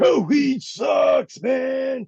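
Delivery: high, slow mock shout.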